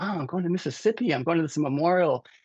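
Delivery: acted, fast, bubbling-over thrilled excitement. Retelling calling a mother to share news: imitating own excited tone. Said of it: "to tell her excitedly".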